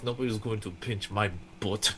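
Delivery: very quiet, low grumble muttered under the breath. During a role-play scene, a character grumbling to himself. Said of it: "grumbles to himself".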